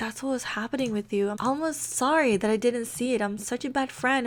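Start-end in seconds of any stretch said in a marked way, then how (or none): none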